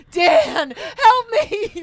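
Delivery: put-on very high, very loud, drawn-out sobbing wail. Retelling working as a ride attendant, imitating own past crying. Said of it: "crying, like".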